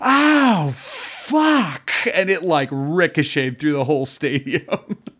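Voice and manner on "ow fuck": very high, shrill, piercing scream. Speaker retelling a woman in the bleachers at a game, retelling a scream. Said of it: "she just screamed".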